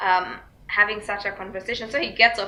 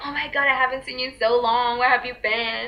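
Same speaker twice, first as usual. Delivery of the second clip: put-on overfamiliar, gushing, excited voice. Retelling a caller's greeting, imitating an overfamiliar excited greeting. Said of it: "he said hello like he knew me".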